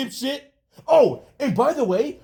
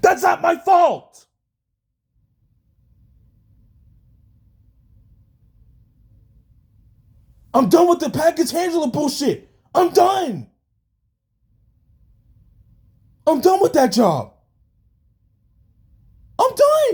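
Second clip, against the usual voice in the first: angry, frustrated, fed-up venting rant; 4 semitones higher than usual. Venting frustration at the package handler job: angry yelling. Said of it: "I'm like angry and just yelling".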